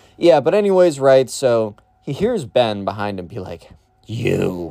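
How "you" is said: creepy, lurking creature voice. Retelling how a kid behind a friend said one word: Gollum voice. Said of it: "Gollum from Lord of the Rings, like, that voice".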